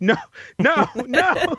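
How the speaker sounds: very high-pitched, shrieking scream. Telling how a man woke to his Roomba spreading poop, retelling a scream. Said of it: "he's screaming like".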